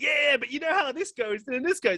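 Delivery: mock relentless, very high, high-energy shouting. Retelling how a man performed his half-hour set, imitating high-energy shouting. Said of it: "at no point did his energy level drop".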